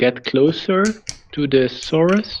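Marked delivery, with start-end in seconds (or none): none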